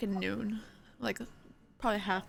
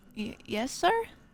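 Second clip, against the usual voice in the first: put-on unsure, hesitant young boy voice, stumbling, stammered start. Voicing a young boy called over by a stranger: hesitant street boy voice. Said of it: "He takes a double take before kinda looking a little strangely at you".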